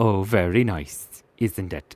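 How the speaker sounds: slow speech with a slight Welsh accent creeping in. Describing a frog, slipping into a slight Welsh accent. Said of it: "I nearly did an, a Welsh accent".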